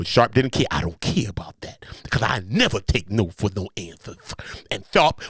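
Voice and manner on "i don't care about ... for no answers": put-on voice leaning hard into lisp on s. Reading out the lawsuit's claims, quoting Shannon Sharpe: Shannon Sharpe voice with a lisp. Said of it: "anytime I talk like Shannon, I make sure I go into the lisp".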